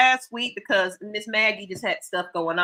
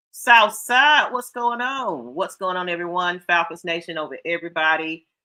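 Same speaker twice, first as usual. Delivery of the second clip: ordinary talk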